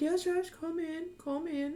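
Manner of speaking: put-on very high, gentle old man's voice. Game master voices the Grandmaster answering a knock: elderly soft-spoken gentle voice. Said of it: "just very soft spoken, gentle voice".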